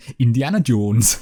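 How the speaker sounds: put-on Geordie accent, Newcastle. Showing how a name sounds in a Newcastle accent. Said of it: "Indiana Jones in a Newcastle accent".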